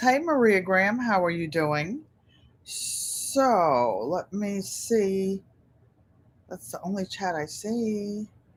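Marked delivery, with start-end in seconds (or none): none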